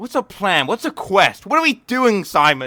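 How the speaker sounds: very high, very loud, shrill impatient badgering. Retelling a line from the video, imitating Lewis sounding impatient.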